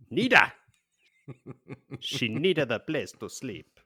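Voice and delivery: put-on Greek accent, a best attempt. Asked how the innkeeper's name is pronounced, answering in a greek accent. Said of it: "That's that was my best Greek accent".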